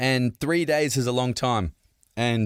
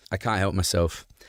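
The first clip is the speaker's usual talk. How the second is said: ordinary delivery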